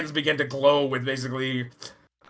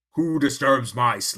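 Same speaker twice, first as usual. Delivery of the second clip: low, sepulchral undead voice, echoing. Speaking as one of the undead, in a sepulchral undead voice. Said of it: "this sort of sepulchral voice".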